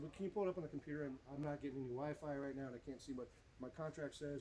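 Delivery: ordinary delivery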